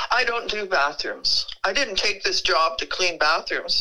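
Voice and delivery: ordinary talk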